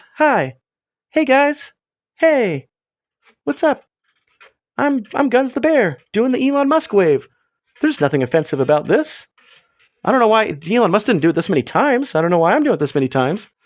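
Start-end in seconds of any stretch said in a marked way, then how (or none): 0.2-7.3 small, high-pitched, unhurried voice. Voicing a toy bear waving hello to viewers: Guns the Bear voice. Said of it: "little Guns, he goes".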